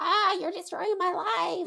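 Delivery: put-on high teenage kid voice, outburst. Talking about how hard parenting is, imitating a teenager. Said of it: "That is my imitation of s-, teenagers".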